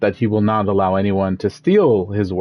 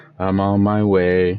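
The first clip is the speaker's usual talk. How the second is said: put-on slow, downcast, miserable, depressed-sounding voice. Imitating Claire's line from the game: imitating Claire sounding depressed. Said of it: "She just sounded so depressed".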